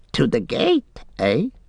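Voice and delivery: squeaky, frightened and startled voice. A narrator reads Gollum's startled reply to his master: Gollum squeaking, surprised and frightened. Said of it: "Gollum squeaked, seeming surprised and frightened".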